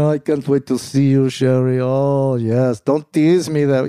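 slow, drawn-out, poor put-on French accent. Speaker redoing a phone-call line from a scene, [name] in bad French accent. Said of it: "My French accent isn't very good".

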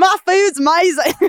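put-on English accent. Mocking people on a show who always praise the food: imitating an English accent. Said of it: "It's pretty close".

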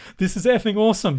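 put-on loud, high yelled outburst. Retell how he picked up the picture you brought him to sign and stood up, retelling a yell. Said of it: "he just stood up and just yelled out".

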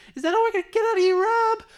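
shrill, very high-pitched shout. Quoting C yelling at Rob during a Gatorade break: C's shrill high yell. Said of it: "had this shrill high pitched voice when he would yell ... that's exactly what he sounds like".

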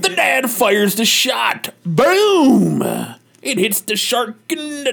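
slow narration pace with "boom" drawn out. Narrating a dad firing at a shark: talking like Cosby. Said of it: "I'm fucking talking like Cosby still".

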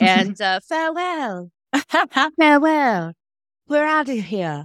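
put-on English accent. Saying goodbye the way Gina just did, in a put-on English accent. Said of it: "Doing your English accent".

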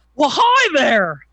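loud, jubilant, exuberant, very high-pitched voice. A returning guest answers the host's welcome back, jubilant greeting. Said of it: "You were jubilant?".

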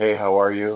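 put-on formal, cool tone. Greeting the podcast listeners after being teased last time: put-on formal, cool greeting. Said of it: "Just very formal, very cool".

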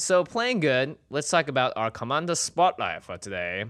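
put-on London accent, loud and high. Introducing the day's commander spotlight as a joke: put-on british accent. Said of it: "we got British".

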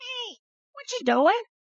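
very high, cartoon talking-dog voice. Showing how the dog talks: voice of Barky the dog. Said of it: "that's the voice of Barky the dog".

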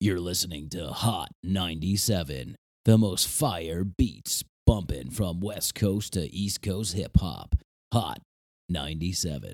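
low radio station-promo announcer voice. Speaker recalls the one guy at Hot 97 who did the station voice: Hot 97 radio announcer voice. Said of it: "the guy that did the voice".

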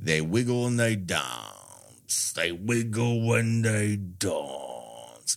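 faux Cockney accent with "dance" drawn out. Recapping a show, quoting a character actor's repeated line, Barker number two's faux Cockney. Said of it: "in his faux Cockney accent".

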